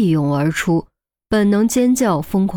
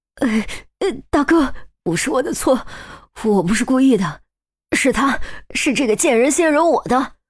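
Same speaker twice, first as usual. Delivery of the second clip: high, quavering, shaky, trembling voice; 5 semitones higher than usual. A narrator voices a man who has fallen to his knees, trembling voice. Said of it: "颤声道".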